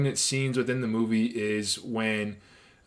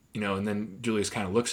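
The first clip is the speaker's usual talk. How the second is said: normal talking voice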